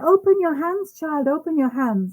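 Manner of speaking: high, nervous, fussing, eager urging tone. Retelling how a teacher at darshan urged her: imitating a loud voice. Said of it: "she said it really loudly".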